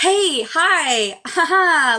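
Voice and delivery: cheery, upbeat, high-pitched voice with stretched-out words. Recalling greeting people as a guest on someone else's live, mock-upbeat. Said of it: "I was trying to be upbeat".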